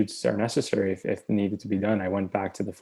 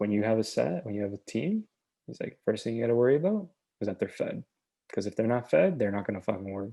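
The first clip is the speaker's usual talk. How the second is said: mock dry, deadpan delivery with no joking tone; 3 dB quieter than usual. Retelling how a filmmaker gave advice at a master class: imitating a deadpan delivery. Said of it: "he told it, like, deadpan, like, straight".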